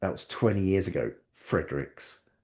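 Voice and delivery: soft, theatrical line reading.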